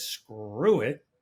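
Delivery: ordinary talk, nothing marked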